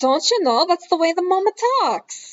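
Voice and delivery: put-on Wisconsin-Minnesota Midwest accent. A podcast host describes how a mother in the story talks, in a minnesota accent. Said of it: "small tidbits of that accent".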